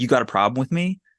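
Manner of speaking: ordinary delivery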